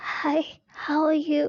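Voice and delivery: high, slow speech with voice gone. Retelling speaking while having lost the voice completely: imitating a lost voice. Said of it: "I lost my voice completely. I was speaking like".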